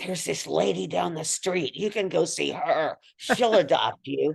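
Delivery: raspy, creaky talking-cat voice. Imagining what the other cats said to a stray, in a cat voice. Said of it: "that's a perfect cat voice as well".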